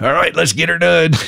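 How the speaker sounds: high, rough comic voice. Retelling what the doctor said before surgery: Larry the Cable Guy voice. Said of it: "in his best Larry the Cable Guy voice".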